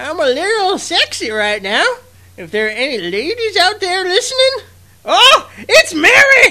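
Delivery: put-on very high, loud, leering old-man voice with wildly swooping pitch. Revealing who voiced the podcast's intro, the host does the Muten Roshi voice. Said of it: "who did the Muten Roshi voice".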